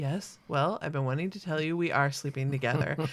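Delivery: mock flat, expressionless tone. Retelling a film scene, the speaker quotes Albert Brooks's reply, retelling Albert Brooks's deadpan line. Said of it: "I just love Albert Brooks just deadpan".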